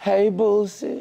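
high, kissy, smoochy, sweet, intimate tone. Repeating back how another speaker greeted them: imitating a kissy greeting. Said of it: "You sound like we was kissing".

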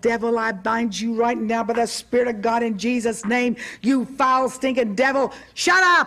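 put-on, fierce, rebuking shout, yelled all-out, very loud. Preacher retelling what he said to a devil in a woman below him: retelling his loudest shout. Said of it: "in the loudest voice I think I've ever had".

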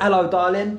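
high, rising tune in an Essex accent.

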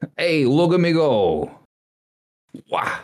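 high Brooklyn-accented cartoon villain voice. Challenged by doubters, the speaker shows off a Brooklyn Waluigi voice. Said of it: "is that like Brooklyn Waluigi?".

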